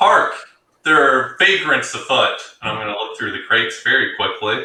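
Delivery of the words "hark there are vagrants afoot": very loud, booming, full-throated yell. A player's character in the cargo hold, yelling out very loudly. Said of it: "I'm going to yell out very loudly".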